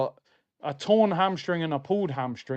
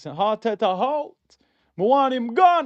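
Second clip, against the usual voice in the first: put-on Jamaican accent, pitched up; 6 semitones higher, 4 dB louder than usual. A co-host asks for this line to be said in a yardman accent. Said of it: "please say this in Yardman accent".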